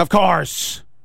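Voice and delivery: mock nearly furious tone. Retelling a comedian's reaction to a question about a pick six: imitating Godfrey getting furious. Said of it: "just getting almost furious".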